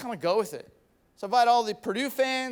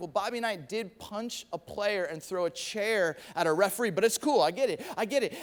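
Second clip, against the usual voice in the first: ordinary delivery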